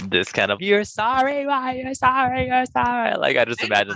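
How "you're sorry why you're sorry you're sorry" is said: put-on movie witch character voice. Imitating a scene from The Craft: Nancy from The Craft voice. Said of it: "That's what I imagine that you saw".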